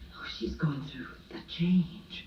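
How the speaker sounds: quiet, soft, hushed, under the breath. Speaker recalls their mother's words to them about an aunt; retelling a hushed remark. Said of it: "saying to me in a hushed voice".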